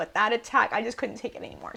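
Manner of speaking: speaking through tears, crying while speaking. Telling a viewer the speaker could not take the attack, crying while speaking. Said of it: "I'm really sorry for crying".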